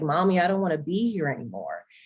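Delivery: put-on tearful, swooping, despairing crying. Retelling a phone call to the speaker's mom while on medication, retelling a tearful plea. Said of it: "on the phone with my mom crying and just in despair".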